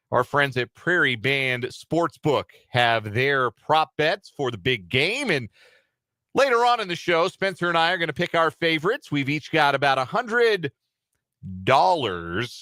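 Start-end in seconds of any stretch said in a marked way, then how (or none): 9.1-12.6 exaggerated air-quote tone, audibly marked. A show host tells listeners each host's betting budget, in an exaggerated air-quote tone. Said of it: "you can hear the exaggeration in my voice".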